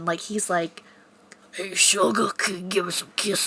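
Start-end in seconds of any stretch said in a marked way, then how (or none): 1.5-3.5 put-on voice of a sixty-year-old man. Voicing the pet rabbit asking the dog for kisses: voicing Bunny as a sixty-year-old man. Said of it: "literally a sixty-year-old man".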